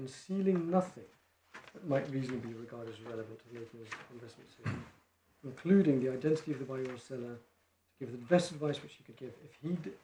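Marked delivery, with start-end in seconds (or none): none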